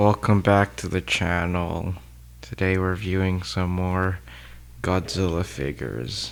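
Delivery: weary-sounding. Welcoming viewers back to the channel, tired. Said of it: "Why do you sound so tired?".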